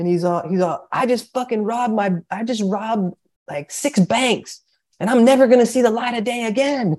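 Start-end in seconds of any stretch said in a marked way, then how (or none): 0.9-7.0 acted-out hollering, pitched-up angry yell. Retelling how a huge inmate in the elevator yelled at them: imitating a man yelling. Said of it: "and he's yelling at these guys".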